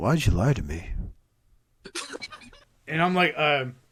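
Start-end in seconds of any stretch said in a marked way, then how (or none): 0.0-0.9 grave, dead serious, very low voice. Retelling a conversation with a man selling toys, imitating him getting serious. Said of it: "And he gets all serious".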